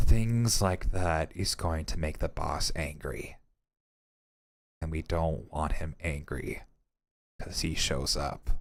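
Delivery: very low, half under-the-breath mumble. Voicing a professor muttering to himself: muttering as Professor Francis. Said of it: "you just hear him mutter".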